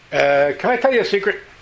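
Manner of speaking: booming, high-pitched, very loud. Retelling someone who comes over offering a secret: very loud question. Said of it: "The whole room just heard that".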